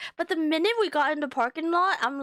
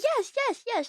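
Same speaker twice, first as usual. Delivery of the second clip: mock thrilled, eager, high, excited voice; 8 semitones higher than usual. Giving joking advice about girlfriends, imitating an excited girlfriend. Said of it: "she'll jump up in excitement and be like".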